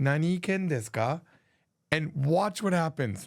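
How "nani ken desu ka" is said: ordinary talk, nothing marked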